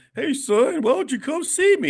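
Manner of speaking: put-on very high old man voice. Acting out the father grown old, asking his son to visit: imitating an old father asking for a visit. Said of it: "you're gonna be an old man".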